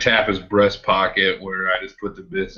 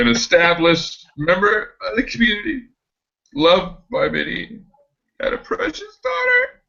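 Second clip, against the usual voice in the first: sniffly, welling up, very high, swooping; 12 semitones higher than usual. Acting out a scene about Mr. Blake, sniffling and welling up. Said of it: "I begin to sniffle, kind of well up".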